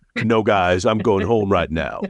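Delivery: very cool, unbothered voice. Imitating Peter turning down everyone's pleas to stay, in a very cool Ken Foray voice. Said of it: "in his very cool Ken Foray voice".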